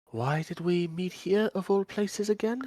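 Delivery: guarded, cautious put-on tone, slightly high. In a tabletop game, a player's character speaks at a restaurant table, in a hushed voice. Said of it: "keeping my voice down".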